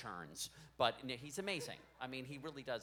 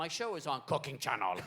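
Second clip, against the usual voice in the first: louder caveman-style voice; 4 semitones higher, 8 dB louder than usual. Talking about his cooking show, showing how he sounds: like a caveman. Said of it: "I sound like a caveman".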